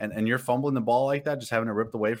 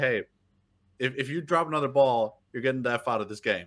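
mock offhand, casual, emotionless delivery. Retelling a coach's threat to a player on the sideline: imitating a casual, emotionless threat. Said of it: "so casual, like, no emotion".

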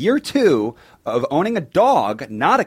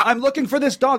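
high-pitched yell. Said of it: "You have to yell at them".

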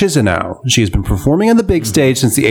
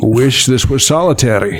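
put-on Scottish accent. Asked to read the words dramatically with a Scottish accent, do a Sean Connery impression. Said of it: "what a good Sean Connery".

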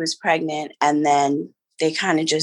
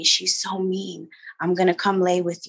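hushed, soft, under-the-breath half-whisper; 3 semitones higher, 3 dB quieter than usual. Retelling how dad came back into the room: imitating a half-whisper. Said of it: "whisper to me".

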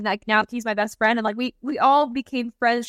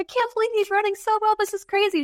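very high, amazed, awestruck excited shouting; 10 semitones higher than usual. Retelling what mom said at the loud race track: imitating mom yelling excitedly. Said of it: "yelling in my ear 'cause it's so loud".

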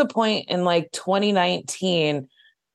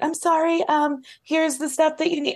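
put-on high-pitched voice that sounds like a little kid; 9 semitones higher, 3 dB quieter than usual. Retelling how your sister spoke to people, imitate her high-pitched kid voice. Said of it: "she has a very like high pitched, she sounds like a kid".

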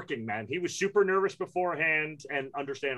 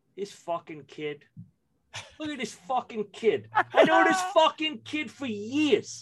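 put-on Brooklyn accent, higher in pitch; 7 semitones higher, 4 dB louder than usual. Retelling watching a friend play, lapsing into his high school Brooklyn self. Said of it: "lapse into the high school Ben Barton from Brooklyn".

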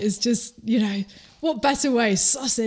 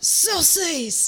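shouted delivery, much higher pitch; 7 semitones higher than usual. Telling a story about a dad answering his kid across a lake, retelling a shout. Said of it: "And the dad shouts".

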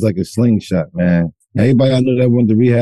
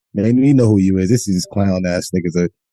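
normal talking voice

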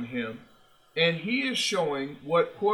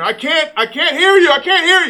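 put-on scream, higher, louder, slower; 12 semitones higher, 11 dB louder than usual. Player recalling screaming at his center during the playoffs, retelling a scream at a teammate. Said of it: "I screamed at our center".

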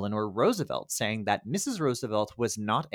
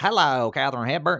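mock Southern drawl, higher and louder; 4 semitones higher, 6 dB louder than usual. Joking about how a film's riverboat captain sounded: put-on Southern accent. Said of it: "he even was, like, Southern".

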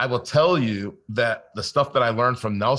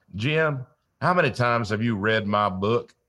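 put-on Southern drawl. Quoting the author he kept calling about his book, imitating a southern drawl. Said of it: "he had the greatest Southern drawl".

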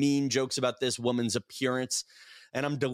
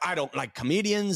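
put-on female Irish accent, higher pitched; 4 semitones higher than usual. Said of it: "Irish accent".

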